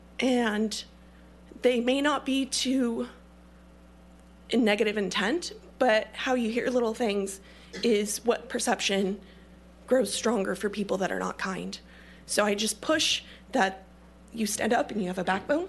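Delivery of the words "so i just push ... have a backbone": shaky, quavering, trembling voice. Speaking in public, addressing the audience directly: shaky voice. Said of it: "I hate that my voice is shaky".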